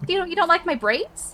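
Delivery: lifted, high-pitched character voice. Voicing a young orc in a tabletop game, in a higher-pitched character voice. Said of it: "like a higher pitched sort of tonality".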